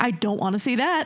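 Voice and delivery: ordinary talk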